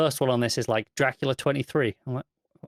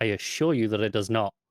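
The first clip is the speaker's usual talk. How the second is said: put-on deadpan delivery, lower pitch; 3 semitones lower than usual. Speaker discussing a comic issue quotes a character's follow-up line, retelling a deadpan reply. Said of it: "The the deadpan, just blank stare, going".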